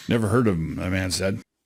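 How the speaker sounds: plain reading voice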